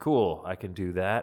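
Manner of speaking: ordinary delivery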